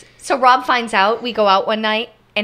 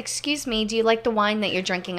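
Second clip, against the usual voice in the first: normal talking voice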